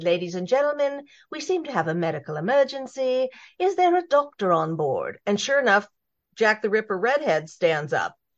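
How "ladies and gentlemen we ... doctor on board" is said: cute, sweet, high British flight-attendant-style voice. Telling a joke, the speaker voices the flight attendant's announcement in a cute british accent. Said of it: "with her little cute British accent".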